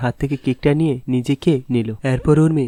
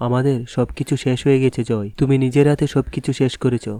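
plain

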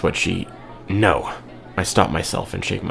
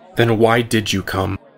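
resentful, cutting, bitter, accusing tone; 3 semitones higher than usual. Answering someone who has turned to leave, bitter. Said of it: "My voice fills with bitterness".

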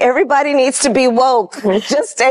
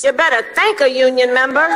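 slight hint of a Southern accent. Telling listeners to thank a union member: Southern-sounding accent. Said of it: "what sounds like a Southern accent".

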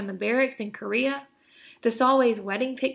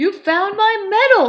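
very loud, high, astonished and amazed exclamation; 9 semitones higher, 10 dB louder than usual. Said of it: "exclaims in amazement".

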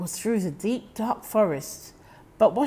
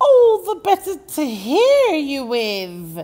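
rasping, hoarse, raised voice, "with" stretched long; 5 semitones higher, 7 dB louder than usual. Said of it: "came the hoarse reply".

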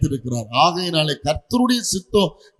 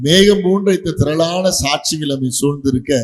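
ordinary talk

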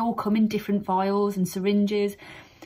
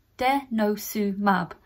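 slow, careful, syllable-by-syllable delivery. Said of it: "need to say it slowly".

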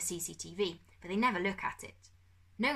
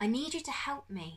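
gentle, unforced, pitched-up tone; 5 semitones higher than usual. A boy speaks to a girl with a bruised eye, said softly. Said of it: "Darkus said softly".

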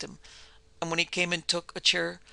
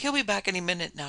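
plain reading voice

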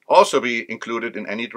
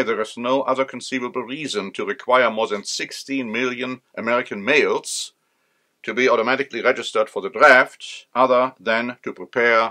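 normal talking voice

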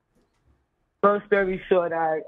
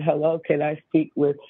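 usual speaking voice

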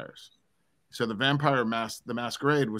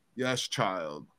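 mock-dramatic goth voice, much lower; 3 semitones lower than usual. Retelling how a goth answered a child, imitating a dramatic goth. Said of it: "so dramatic".

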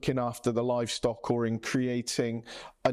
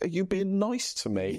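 mock-suspicious, sarcastic, pitched-up delivery; 7 semitones higher than usual. Describing colleagues' reaction when praised, imitating their sarcastic reply. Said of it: "All sarcastic".

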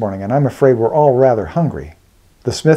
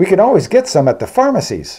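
openly proud, pitched-up tone; 7 semitones higher than usual. Reading Eugen's answer to another traveller's question about fuel, proudly. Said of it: "answered Eugen proudly".

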